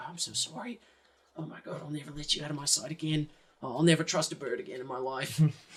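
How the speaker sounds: close, soft, hushed, private half-whisper. Voicing a character clutching a recovered book, apologizing to it: half-whispering. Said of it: "whispering to the book".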